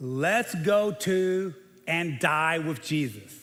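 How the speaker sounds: play-acted dry, skeptical, sarcastic mutter under the breath. Reading a disciple's words aloud to the listeners, mock-sarcastic retelling. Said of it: "read this with that sarcastic voice".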